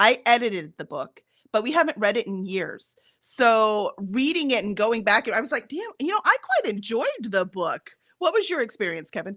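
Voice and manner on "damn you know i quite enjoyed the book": genuine surprise with a swooping sing-song tune. Retelling own reaction on rereading the book, retelling own surprise. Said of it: "note of surprise in your voice".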